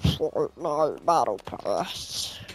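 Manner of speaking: unsettling, spooky, eerie voice. Joking about how the game's phrase gets said: creepy voice. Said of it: "in a creepy voice".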